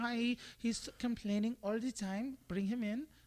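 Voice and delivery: put-on Swiss girl accent, high and slow. Imitating a woman bringing her complaining husband along: swiss accent of a woman. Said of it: "That was my Swiss accent of a girl".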